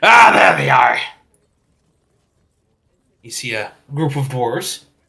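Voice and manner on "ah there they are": stern, very loud shouting yell. A narrator voices someone calling out as the players reach the crossroads: stern yell. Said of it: "you hear a pretty stern voice yell out".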